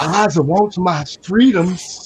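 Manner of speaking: put-on old-movie dialect, high and slow. Showing how people talk in old movies: imitating old-movie dialect. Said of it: "They talking like this".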